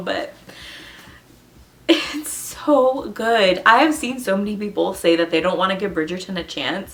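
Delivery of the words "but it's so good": teary voice, tearing up, very slow. Speaker recommending a story that made them cry, tearing up. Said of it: "I'm like tearing up a little bit right now".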